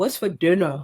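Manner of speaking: put-on low, deep voice like an old smoker. Speaker quotes a seven-year-old boy, imitating a seven-year-old's deep voice. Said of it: "he has a deep voice".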